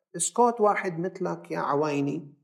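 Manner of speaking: plain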